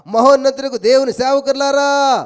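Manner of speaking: loud, slow, regal calling out like a king.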